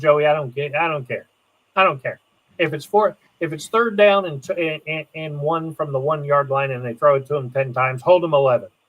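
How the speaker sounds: ordinary talk, nothing marked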